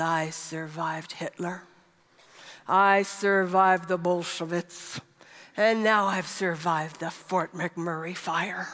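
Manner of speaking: put-on low, gruff, rough-edged old man's voice. Retelling what a man who grew up in Prague said, in a put-on gruff voice. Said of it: "in his gruff voice".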